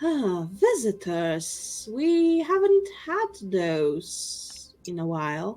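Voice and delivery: cavernous, very echoing, reverberating voice. A figure approaching visitors greets them, in a very echoing voice. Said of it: "has a very echoing voice".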